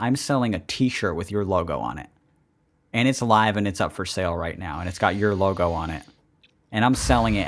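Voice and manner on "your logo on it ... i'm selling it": ordinary talk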